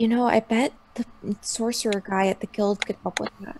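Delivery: secretive, soft, hushed half-whisper. A character leans in so the guy won't hear her, half-whisper. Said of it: "in a whisper so that the guy won't hear her".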